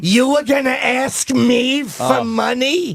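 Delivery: very high-pitched, put-on female voice. Showing the others a Sylvia Miles impression. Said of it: "I do a really good Sylvia Miles".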